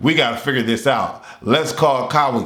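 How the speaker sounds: ordinary delivery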